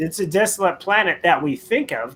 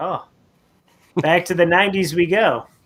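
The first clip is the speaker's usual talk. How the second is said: ordinary talk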